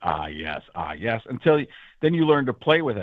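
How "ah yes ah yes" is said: very deep, slow, hushed voice dropped way down. Explaining how to learn Morgan Freeman, saying ah yes: Morgan Freeman voice practice. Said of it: "you just drop your voice as much as you can and say ah yes a bunch".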